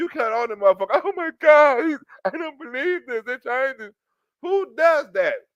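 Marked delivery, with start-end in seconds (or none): 1.0-3.9 put-on tearful sobbing through the words. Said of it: "Who cries first and then cut on the camera?".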